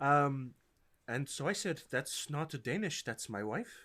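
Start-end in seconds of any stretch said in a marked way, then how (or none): 1.9-3.7 put-on Icelandic-accented speech. Voicing a character's line in the game: put-on Icelandic accent. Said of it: "I looked up Icelandic accent".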